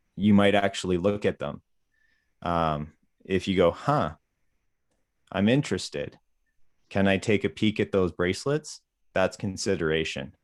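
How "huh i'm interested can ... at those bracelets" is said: ordinary talk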